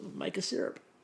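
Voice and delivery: hushed, very quiet whisper. Retelling a quiet suggestion during a dessert challenge: imitating someone speaking very quietly. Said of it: "Reese just very quietly goes".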